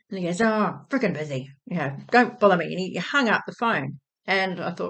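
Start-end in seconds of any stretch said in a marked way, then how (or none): 0.4-2.6 irritable, grumpy, dismissive grumble. Retelling a phone call, imitating Dad sounding grumpy. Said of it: "Just grumpy".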